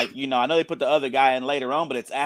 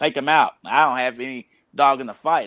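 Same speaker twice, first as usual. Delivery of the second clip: plain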